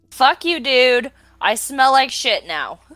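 screaming in anger. Role-playing, your character screams at the ghost trap: screaming in anger. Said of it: "I scream at the ghost trap".

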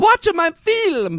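put-on very high-pitched voice with Italian accent. Continuing a director impression after another says he's Mario: Mario voice. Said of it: "He's Mario".

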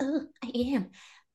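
high, tiny moan. Acting out a quoted reply in a degrading scene: imitating a tiny man climaxing. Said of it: "Why do you love sounding like a tiny man coming?".

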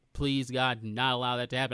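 usual speaking voice

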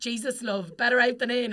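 put-on strongest, thick, broad Welsh accent. Quoting a man at the turnstiles reacting to the speaker's burp, strong welsh accent. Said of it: "like the strongest Welsh accent".

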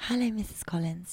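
put-on, polished phone-answering tone. Acting out greeting a softly spoken caller on the phone, in a put-on telephone voice. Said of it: "Put on my tone, don't I?".

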